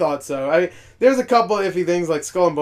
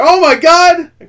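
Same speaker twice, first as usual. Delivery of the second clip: hyped squeal of joy, very high and loud; 12 dB louder than usual. Retelling a reaction to a game reveal: imitating own excited outburst. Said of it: "I was happy outside 'cause I was like".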